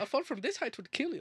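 put-on very high, lilting Irish accent. Retelling a movie character's line, in an Irish-sounding accent. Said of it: "that was more Irish".

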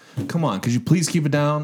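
play-acted fed-up, frustrated, exasperated voice. Retelling how a noise-complaining neighbor asked to keep it down: imitating a frustrated neighbor. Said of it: "kind of frustrated".

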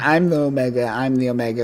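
mock cocky, bragging voice. Retelling a comic scene where a character repeats his boast: imitating a cocky character. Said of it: "kind of cocky".

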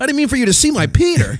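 high, squeaky, pitched way up, apologetic voice. Trying out a Peter impression for the others: Peter Brady voice. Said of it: "It's gotta be Peter".

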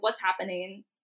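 ordinary talk

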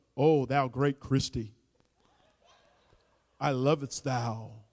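put-on low, slow, pompous, old-fashioned prayer voice. Demonstrating prayer-style speech addressed to his wife at home, changed, showy prayer voice. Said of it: "and you change your voice".

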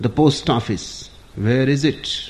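ordinary talk

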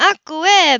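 high, loud delighted cry through happy laughter. Narrator reads little Stevie's line as Ebenezer catches and lifts him; crying out, laughing delightedly. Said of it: "he cried, laughing delightedly".

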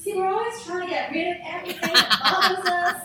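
put-on American accent. Repeating a sentence the way she would say it, in a put-on american accent. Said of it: "Imagine in her American accent".

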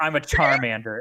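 furious, indignant, offended tone. Retelling a childhood retort to a stranger, imitating own furious retort. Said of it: "And I was furious".

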